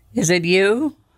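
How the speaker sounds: hissed, breaking voice. Narrator reads the woman's words to Harold: hissed, voice breaking. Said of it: "she hissed, voice breaking".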